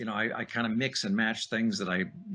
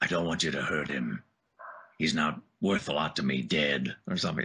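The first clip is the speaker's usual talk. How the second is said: put-on gruff bounty hunter voice; 7 semitones lower than usual. Quoting a line while discussing original voiceover work, gruff Boba Fett voice. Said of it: "it was just sort of a gruff".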